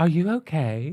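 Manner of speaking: offhand, sauntering, breezy and lovely delivery. Retelling meeting Valentina, imitating Valentina asking a question. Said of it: "The one time I met Valentina, she's like".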